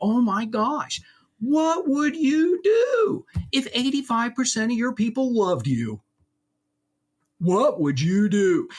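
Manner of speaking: over-the-top, gushing, sarcastic amazement, high and swooping. Retelling what the speaker tells clients, with sarcastic mock astonishment. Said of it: "And I'm real sarcastic".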